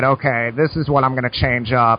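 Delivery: ordinary delivery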